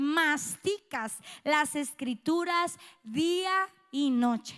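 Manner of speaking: slow, emphatic reading with stressed phrasing.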